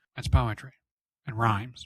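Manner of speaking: very monotone, completely flat delivery. Retelling the filmmaker explaining his storyboards: monotone George Lucas voice. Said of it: "in this very monotone George Lucas voice".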